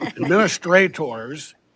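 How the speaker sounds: stress on administrators.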